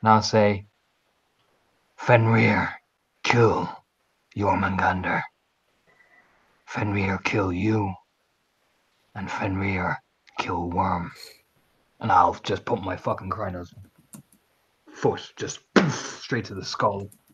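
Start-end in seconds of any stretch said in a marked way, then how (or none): 2.0-11.1 slow, deliberate, unhurried monster voice. Player saying what his character will command in the Krynos tongue: slow Hamid voice. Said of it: "say it slowly in a Krynos, my Krynos tongue, to the Hamid form, you know, use the Hamid voice".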